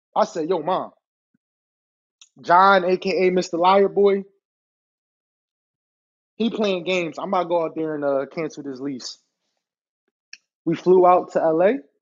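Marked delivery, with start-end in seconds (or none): none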